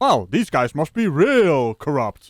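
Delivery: slow, drawn-out, heavily sarcastic delivery.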